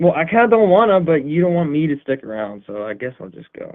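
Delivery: wounded, hurt, crestfallen and dejected. Told to just go if he wants, answering that he'll go: hurt, dejected. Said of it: "sounding like somebody smacked your puppy".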